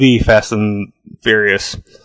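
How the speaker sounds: "the" emphasized. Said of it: "Fast and Furious became".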